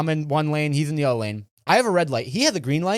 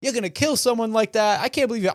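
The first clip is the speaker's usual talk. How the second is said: angry, high, accusing shout; 7 semitones higher than usual. Retelling what an angry driver yelled: imitating someone yelling. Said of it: "He starts yelling".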